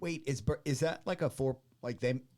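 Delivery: stumbling over words. Breaking into the conversation with a question, speaker is stuttering. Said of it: "I'm stuttering".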